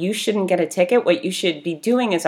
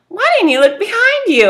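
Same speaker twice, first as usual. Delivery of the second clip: mock very high, half-laughing voice; 14 semitones higher, 7 dB louder than usual. Retelling what you asked her after the car got rocked, in a laughy way. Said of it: "I said it in kind of a laughy way".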